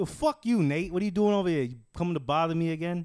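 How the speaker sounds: New York City accent.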